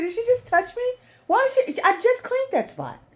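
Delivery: squealing very high and very loud, shrill cat voice. Voicing the cat Kit Kat while the niece touches him: Kit Kat voice. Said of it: "He's like".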